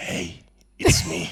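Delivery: creepy, eerie voice. Greeting everyone as the podcast's new ghost voice, in a creepy voice. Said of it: "That sounds creepy".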